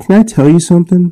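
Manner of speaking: put-on high, eager, excited little-girl voice. Retelling a gentleman's daughter starting to tell him a story: imitating an excited girl. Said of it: "Getting all excited".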